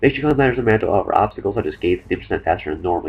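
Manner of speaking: fast, rattled-off, rushed reading. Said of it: "I know I'm talking kinda fast".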